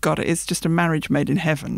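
normal talking voice

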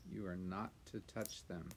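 ordinary delivery

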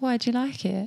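talking softly. Asking a friend if they like it, talking all soft. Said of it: "she's doing it".

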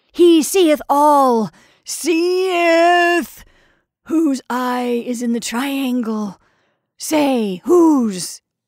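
loud, slow, savage drawl, last syllables and seeth stretched. Narrator reads the crazy pilgrim ranting to the landlady, with a savage drawl. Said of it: "The crazy pilgrim was sitting on a bench with his back to me. ... with a sort of incongruous and savage drawl on the last syllable of each word".

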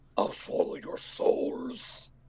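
acted demonic voice. During a podcast roll call, a co-host called on to say hello answers in a Satan voice. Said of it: "No, that was Satan".

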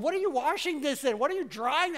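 put-on mild yelling. Retelling questions shouted at a wife about washing jeans: retelling own yelling. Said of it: "yelling at my wife".

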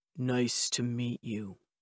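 very low, deep, soft, hushed voice. Narrator reads a gentleman's reply after an awkward handshake, in a deep voice. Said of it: "In a deep voice".

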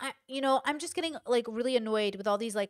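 plain

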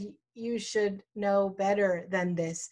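ordinary delivery

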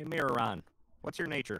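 put-on American southern US accent. Calling out to a mirror reflection in the game: southern accent. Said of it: "why am I going with a southern accent now?".

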